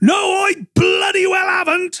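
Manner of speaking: very high, loud shouting. Reading a story aloud, Harry shouts back to Jim, shouting. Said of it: "Harry shouted back".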